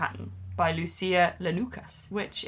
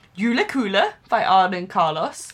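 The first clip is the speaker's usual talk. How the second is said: careful, slow Swedish accent, raised pitch, every word; 5 dB louder than usual. Reading out a swedish pattern name and designer: swedish accent. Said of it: "I hope I did a good Swedish accent there".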